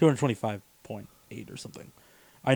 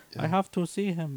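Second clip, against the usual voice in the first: high, stiff, stilted, put-on voice; 6 semitones higher, 6 dB quieter than usual. Retelling a character who speaks stilted english, in a put-on stilted english voice. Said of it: "I'm doing a voice because this is as good as the voice acting god".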